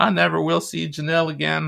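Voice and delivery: bad put-on Southern accent, pitched high. Imitating a sad person on a cold case show, terrible southern accent. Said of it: "I just did a terrible Southern accent".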